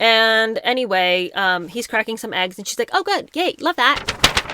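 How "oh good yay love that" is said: very high, put-on, forced gushing enthusiasm. Retelling Megan reacting to cracked eggs: imitating Megan's forced enthusiasm. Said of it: "trying to act like everything he does is great".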